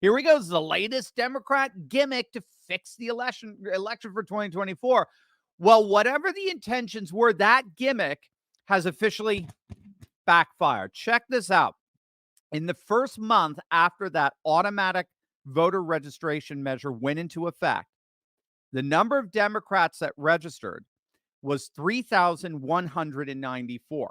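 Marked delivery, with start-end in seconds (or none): 0.0-5.1 freaked-out, panicked voice. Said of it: "everyone was freaking out".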